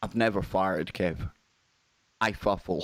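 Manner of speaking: low, completely serious deadpan delivery. Retelling what a girlfriend said, looking straight in the eye: imitating deadpan seriousness. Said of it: "deadpan serious".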